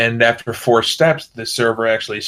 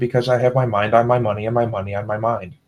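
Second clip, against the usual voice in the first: play-acted, dry, flat, dead-serious deadpan delivery. Retelling answering a stranger who asked about the check stub, retelling a deadpan reply. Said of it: "And just deadpan".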